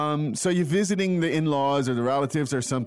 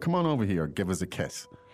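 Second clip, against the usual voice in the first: ordinary delivery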